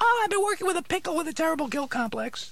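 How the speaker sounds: ordinary talk, nothing marked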